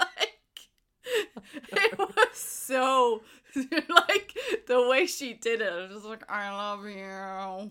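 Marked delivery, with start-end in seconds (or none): 6.3-7.7 put-on gritted-teeth voice, slower. Retelling a scene, imitating Carmen saying it through gritted teeth. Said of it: "through fucking gritted teeth".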